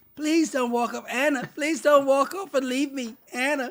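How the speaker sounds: shrill, very high, whiny begging voice. Mocking this fool's plea to anna, in a mock-whiny pleading voice. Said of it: "acting like a whiny little".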